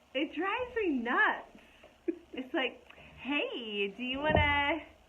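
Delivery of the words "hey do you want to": put-on twenty-something valley girl way of talking. Mocking the young women who voice streaming ads: imitating a vaping Valley girl voice. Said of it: "they talk like this".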